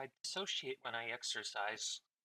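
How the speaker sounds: very quiet mumbling under the breath. Imitating Sky mumbling to himself: imitating someone mumbling. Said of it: "mumbling to himself".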